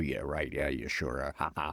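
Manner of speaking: very low, offhand, tossed-off yeah-yeahs. Retelling an old stand-up bit, doing a George Clooney impression. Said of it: "a George Clooney impression, and I'd go".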